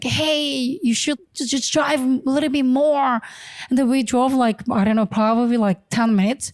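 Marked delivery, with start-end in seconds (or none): 0.0-3.2 mock yelling, higher pitch. Retelling what armed men from another car yelled at them, retelling men yelling. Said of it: "they were really yelling at us like".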